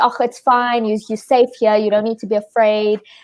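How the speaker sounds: ordinary delivery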